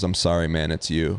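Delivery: put-on whisper. Retelling how a player leaned over right before the vote: imitating a whisper. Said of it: "he leans over to me and whispers".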